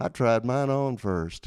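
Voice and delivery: put-on accent of the American South. Quoting Butch backstage at the church, in Butch's Southern accent. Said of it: "in his true Southern accent".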